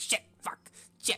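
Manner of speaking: quietly muttering to himself under the breath. Voicing a character fumbling with locks at night: swearing under his breath. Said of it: "swearing under his breath".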